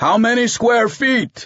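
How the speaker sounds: drawn-out shout, very high-pitched and slow. In the truck, Dominguez ignores Edita and yells back to the men. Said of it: "He yelled back to the men".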